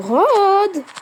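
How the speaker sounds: high, loud calling out.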